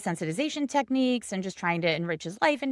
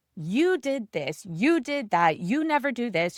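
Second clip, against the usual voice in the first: mock screaming, two voices; 2 semitones higher than usual. Retelling clients' fight at a session: imitating a couple screaming. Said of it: "the two of them just start screaming at each other".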